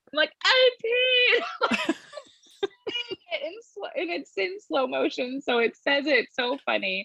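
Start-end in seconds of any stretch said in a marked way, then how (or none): 0.4-1.9 put-on giggling through the words, very high. Retelling a slow-motion TikTok flip, acting out laughing while speaking. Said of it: "I start laughing as I'm jumping".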